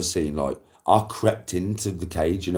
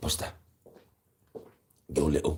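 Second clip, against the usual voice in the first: breathy, whispered, put-on dog voice; 3 semitones lower, 7 dB quieter than usual. Voicing a dog in doggy heaven talking to another dog: put-on dog voice. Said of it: "In doggy language ... sound something like this".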